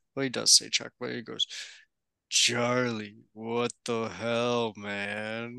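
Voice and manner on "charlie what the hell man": put-on, very slow, drawn-out, exasperated dad voice. Imitating someone's dad scolding Charlie: Dave impression. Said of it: "That was a horrible Dave impression".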